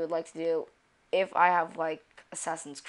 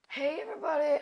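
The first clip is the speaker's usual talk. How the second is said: cracking voice jumping way up high; 10 semitones higher than usual. Opening a Spiral Knights video, greeting everybody with a voice cracking. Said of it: "voice cracks for the win".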